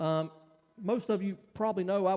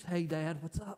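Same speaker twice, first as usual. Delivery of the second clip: mock sheepish tone, quieter; 4 dB quieter than usual. Retelling going up to Dad after the game: imitating own sheepish greeting.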